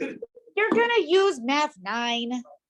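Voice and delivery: mocking, sarcastic, slow drawl. Retelling a remark from the left side of the room: imitating a sarcastic remark. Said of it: "Sarcastically, he said".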